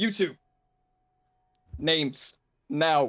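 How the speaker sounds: stern, severe, strict fatherly voice. A character turns to two others and demands their names, in a stern voice. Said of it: "he adopts kind of like the the stern voice that his father used to do".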